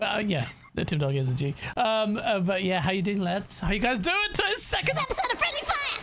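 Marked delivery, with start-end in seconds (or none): 4.3-6.0 very high, squeaky, sped-up voice. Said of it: "turn into a goddamn Alvin and the Chipmunk".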